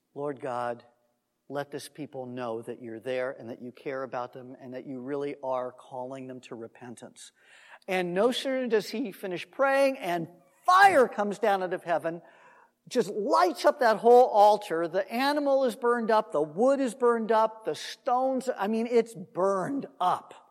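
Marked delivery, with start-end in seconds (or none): 0.1-7.3 soft, quiet, low-pitched voice. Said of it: "He just quietly says".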